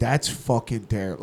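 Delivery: acted, imitated angry voice. Retelling a friend's reaction to tasting a Negroni: imitating Little John pissed off. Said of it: "he was, like, pissed off".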